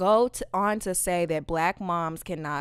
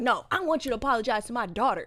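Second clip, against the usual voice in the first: put-on yell, higher pitched; 5 semitones higher than usual. Retelling a mom confronting a boy at school: imitating a mom yelling. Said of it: "yelling at him and going in".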